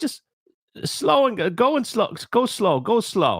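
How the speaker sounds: put-on high-pitched Jamaican accent. Retelling what a bartender said about a strong drink: imitating a Jamaican accent. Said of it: "he's, like, Jamaican".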